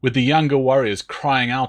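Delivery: ordinary delivery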